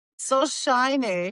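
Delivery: put-on German accent, male voice.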